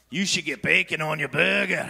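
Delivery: put-on Scottish-accented voice. Voicing the junk-food voice in their head, Seamus McGravy: Scottish accent. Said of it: "he's got a Scottish accent".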